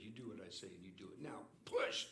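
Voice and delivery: mock stern, firm, no-nonsense commanding tone. A dad retells ordering his daughter in the driver's seat, retelling a stern command. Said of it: "And then I got real stern".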